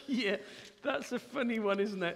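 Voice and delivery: amused, laughing while speaking. After reading a Bible verse aloud, the speaker reacts to it, laughing while speaking. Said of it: "I'm only laughing because".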